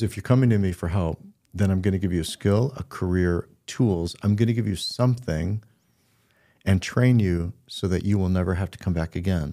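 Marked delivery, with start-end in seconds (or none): none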